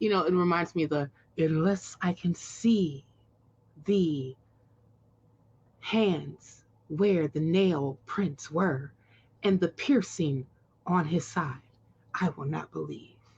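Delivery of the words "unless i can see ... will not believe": halting, dramatic put-on actor voice. Quoting the Doubting Thomas passage from the Bible as William Shatner. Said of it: "my Shatner impersonation of doing the Bible".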